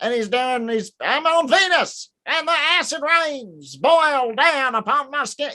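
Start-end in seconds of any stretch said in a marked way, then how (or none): 1.0-5.5 slow, high Southern preacher voice with a lilt. Showing how Edgar Casey sounds on his tapes: imitating Edgar Casey's Southern preacher voice. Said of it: "he's kind of a Southern man".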